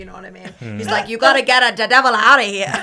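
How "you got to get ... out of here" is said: put-on loud, heavily laid-on Italian accent. Reviewing a film, mimic Russell Crowe doing an Italian accent that verges on Dolmio. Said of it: "doing an okay Italian accent".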